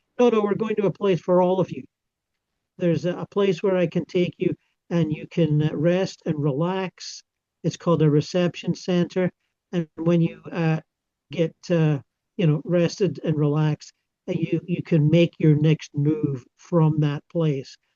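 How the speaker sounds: ordinary delivery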